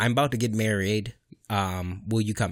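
ordinary delivery

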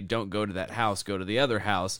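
ordinary delivery

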